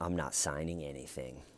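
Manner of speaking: mock icy deadpan, cold, low, quiet, no warmth. Retelling a tense conversation about signing a house back; imitating Dalia speaking coldly. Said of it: "Dalia just coldly goes".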